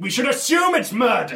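extremely loud, announcing voice. A player's character turns to a fellow character and announces it, extremely loudly. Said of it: "turn to Dorothy and say extremely".

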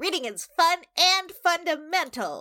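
very high, slightly nasal mascot character voice. Playing a library mascot talking to kids, in a nasal library mascot voice. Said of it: "Can you say that one?".

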